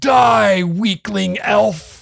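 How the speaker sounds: very high, shrill, rough, rasping goblin screech. A game master voicing a goblin swinging a morning star at the player, goblin scream. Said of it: "as he screams in goblin".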